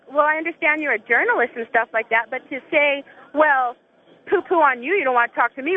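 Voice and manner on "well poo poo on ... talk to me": ordinary delivery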